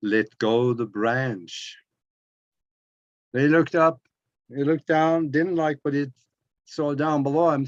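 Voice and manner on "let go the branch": very low, slow, deep rumbling voice. Telling a joke, voicing the reply from above to the man's plea, rumbling voice. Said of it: "he heard this rumbling voice up there".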